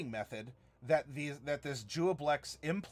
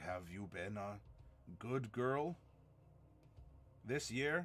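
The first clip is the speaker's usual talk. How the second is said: shy, very quiet, low hushed voice, rising pitch; 6 semitones lower, 9 dB quieter than usual. Speaker quotes a shy little kid's question: low, deep voice. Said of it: "in the low voice".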